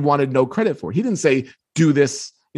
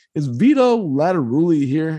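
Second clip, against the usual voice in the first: put-on mild, meek, timid, self-effacing voice. Retelling asking an old man at gate b for someone; imitating own meek voice. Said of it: "all meek sounding".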